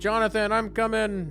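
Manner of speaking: acted yelling, shouting out loud. Playing a character who yells out to Jonathan: yelling out in character. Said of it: "she, like, yells out".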